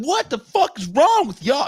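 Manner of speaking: put-on angry, fed-up voice. Retelling how a buddy reacted when grabbed: imitating an angry friend. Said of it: "And he's mad".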